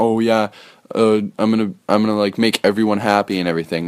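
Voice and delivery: plain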